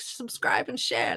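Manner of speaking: breathy, whispery, breathed-out delivery. Signing off, the speaker mimics how teen gamers say it: imitating teen YouTube gamers. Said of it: "I hear like the the gamers on YouTube who go like".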